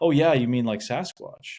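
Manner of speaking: breezy, unbothered, nonchalant offhand tone. Retelling what a boat captain said about the weird events: imitating a nonchalant tone. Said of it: "the captain's kind of very nonchalantly like".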